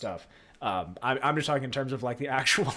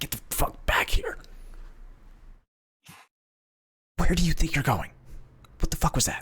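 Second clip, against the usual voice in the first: furious, aggressive, angry scolding tone. Voicing a character yanking the party back: aggressive scolding. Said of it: "rather aggressive and sa-, like, almost, like, scolding at you".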